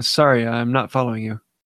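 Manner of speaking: ordinary talk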